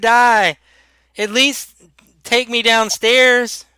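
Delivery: frightened voice. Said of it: "He sounds terrified".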